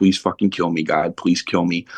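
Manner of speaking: ordinary talk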